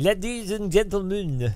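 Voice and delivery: put-on French Canadian accent. Imitating a man who sounds like the D-Box owner, in a French Canadian accent. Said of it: "He's got the same French Canadian accent".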